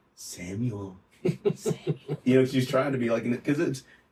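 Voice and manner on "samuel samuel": put-on still, small, feminine whispering voice. Recalling how Mrs. Frazier called a name, imitating Mrs. Frazier's whisper. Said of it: "like a very whispering small".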